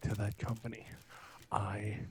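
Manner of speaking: hushed whispering.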